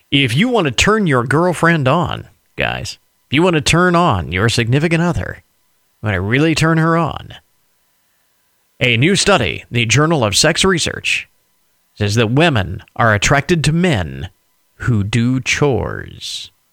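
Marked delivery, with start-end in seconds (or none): 8.8-16.4 low, put-on sexy voice, as sexy as possible. Presenter reading a news study to the audience, in his sexiest voice possible. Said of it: "He says in his sexiest voice possible".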